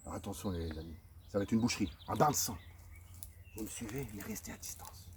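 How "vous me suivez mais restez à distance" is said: very soft, hushed, stealthy voice. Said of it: "Je ne fais pas de bruit".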